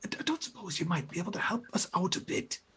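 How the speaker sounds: soft whispering. A game master voices a whisper coming from overhead: whispering. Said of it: "This this whisper seems to be coming from overhead".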